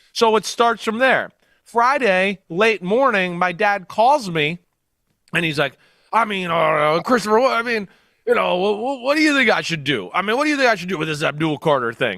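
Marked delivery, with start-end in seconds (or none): 6.1-12.1 halting, stop-start rambling voice full of filler sounds. Retelling his dad's phone call about a jersey decision, imitating his dad's voice. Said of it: "this is my dad voice".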